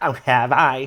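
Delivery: mock annoyed, put-on irritated tone. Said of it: "And you just hear her go".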